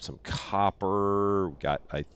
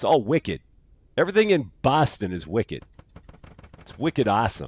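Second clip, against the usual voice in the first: poorly done put-on Boston accent; 4 dB louder than usual. Narrating moves while playing a card game: horrible Boston accent. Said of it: "it's a horrible accent".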